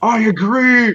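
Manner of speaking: loud stage whisper. Playing a character who suspects someone is outside, agreeing in a loud whisper. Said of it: "He whispers loudly".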